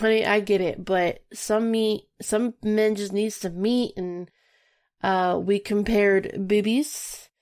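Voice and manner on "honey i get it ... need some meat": ordinary delivery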